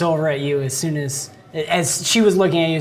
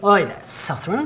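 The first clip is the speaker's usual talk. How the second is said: put-on young, boyish, wild northern elf voice, higher; 3 semitones higher than usual. Narrating to a player, voicing a boy calling from behind: young boyish wild-elf accent. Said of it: "this voice that has the accent of the northerner elves".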